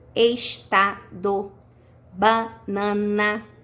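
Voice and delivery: very slow, each syllable spelled out separately.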